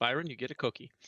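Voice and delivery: muttered under the breath. Muttering to a companion while walking over together: muttering under his breath. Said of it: "under his breath".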